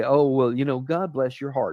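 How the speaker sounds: put-on mocking tone. Speaker acts out how people misuse a blessing against others: imitating a mocking tone. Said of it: "you mockingly say".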